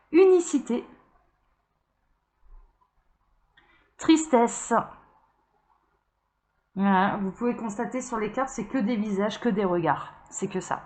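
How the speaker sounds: moved, touched, emotional tone. Showing cards to the camera, speaker is moved and emotional. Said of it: "je suis émue".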